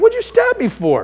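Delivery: put-on disbelieving laugh, very high pitch. Recounting being stabbed, speaking to the kid holding the knife, retelling laughing while asking. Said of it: "I was laughing".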